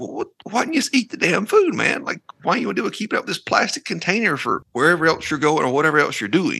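high, exasperated mock rant in disbelief. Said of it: "But then it's like".

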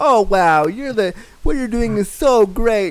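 put-on gushing, effusive voice. Imitating how people praise someone in that voice, mock-gushing praise voice. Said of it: "they'll say it in that voice, like".

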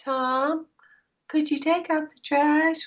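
put-on very high little-girl voice. Contrasting two ways of speaking up, demonstrating the wrong one: girly voice. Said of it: "she picks up the girl voice".

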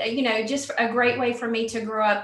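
ordinary talk, nothing marked

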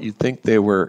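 ordinary delivery

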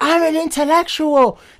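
furious high-pitched screaming. Retelling a debate where a girl got angry: imitating an angry scream. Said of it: "she started getting angry and screaming".

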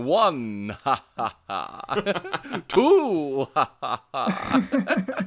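put-on vampire voice, awful cackle, very high, swooping. Joining a joke about a vampire laugh: the Count impression. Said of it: "I did an awful impression of the Count".

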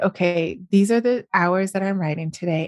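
normal talking voice

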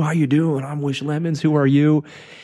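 put-on booming man's voice. Describing a man barging into the room, quoting his greeting in Wish Lemons's big booming voice. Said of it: "big booming voice".

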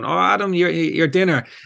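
shouting called across a distance. Retelling the neighbour's dad calling over the fence: imitating someone shouting. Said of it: "his dad was shouting over the fence going".

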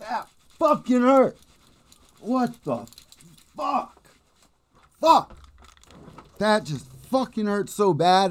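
pained, high-pitched cursing through sudden sharp pain. Just banged a leg hard while closing the door; in pain, cursing. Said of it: "I just banged my leg so freaking hard".

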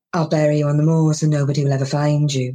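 low, flat, expressionless, menacing deadpan. Retelling his stage bit for an american audience, retelling a low deadpan threat. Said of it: "I lower my voice and I look deadpan".

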